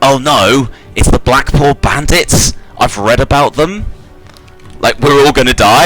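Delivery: high, frantic, panicked, freaking-out voice. Gilchrist sees Gnolls with rocket launchers out the window; Gilchrist freaking out. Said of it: "Gilchrist, who is kind of like freaking out in the corner".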